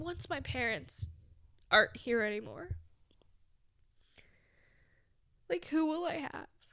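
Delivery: high, tearful crying voice catching mid-line. Speaker who realizes mid-talk they're actually crying; crying. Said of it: "I'm actually crying".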